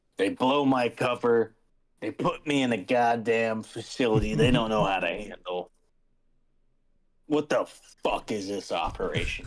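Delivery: grumbling under breath, clearly heard. Voicing a character grumbling to himself so everyone hears: loud mumbling to himself. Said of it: "very audibly, like, mumble to himself".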